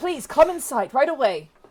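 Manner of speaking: shouting.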